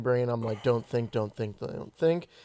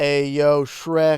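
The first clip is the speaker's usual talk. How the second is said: loud, put-on tough-guy mafia goon voice; 2 semitones higher, 8 dB louder than usual. Joking that mobsters threaten Shrek: put-on mafia mobster voice. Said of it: "the mafia shows up in Shrek".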